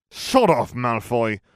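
snarling at full volume, very loud. Narrating a story, a player answering a rival's taunt, snarling. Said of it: "Jim snarled".

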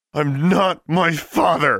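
very high, very slow, drawn-out, loud snarl. Held in a man's grasp, she answers him, snarled. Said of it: "she snarled".

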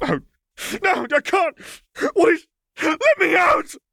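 frantic, desperate shriek, very high and swooping. Narrating a panicked officer rushing the crowd to break free, the reader voices him: wild, desperate yell. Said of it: "He yelled, wild and desperate".

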